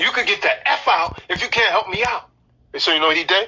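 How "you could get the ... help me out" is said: angry, scolding cursing-out. Retelling how a woman cursed a man out: imitating a woman cursing him out. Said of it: "she didn't say it like that".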